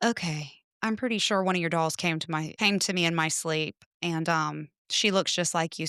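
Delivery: ordinary talk, nothing marked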